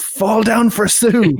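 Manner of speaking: screamed at a very high pitch. Acting out a wrestler screaming at a man who won't fall down, imitating Brodie Lee screaming. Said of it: "Brody is just screaming at him".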